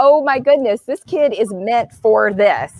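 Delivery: normal talking voice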